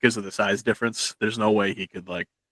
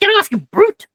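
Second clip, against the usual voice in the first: very high, very loud, shrill, indignant creature-like shriek; 10 dB louder than usual. Voicing a grappled creature lifted off the ground: indignant creature voice. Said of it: "he seems to be more indignant at being grappled".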